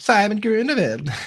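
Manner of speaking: fake Dutch accent, very high and loud. Speakers joke with someone leaving for Europe, in a fake Dutch accent. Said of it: "Your Dutch accents are on point".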